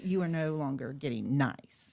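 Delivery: put-on loud scolding tone. Retelling a reply to a fifteen-year-old in an argument: imitating own raised voice. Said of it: "when you raise your voice".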